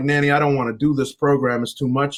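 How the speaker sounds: mock sobbing, crying, tearful pleading tone. The speaker retells phoning nanny for a way out: retelling crying on the phone. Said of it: "I'm crying on the phone like".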